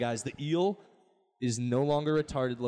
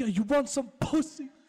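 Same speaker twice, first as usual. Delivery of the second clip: British street talk, pitched way up; 10 semitones higher than usual. Describing fights on the show Top Boy, the speaker imitates them: Top Boy British accent. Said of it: "they're British in that".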